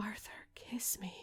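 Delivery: sultry, breathy, voluptuous whisper. Retelling a story scene where she calls to Arthur, voluptuous voice. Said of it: "she speaks in a voluptuous voice".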